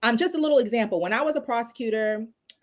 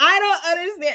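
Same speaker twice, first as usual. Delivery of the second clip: put-on high, lost, confused young voice. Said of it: "she would just be like".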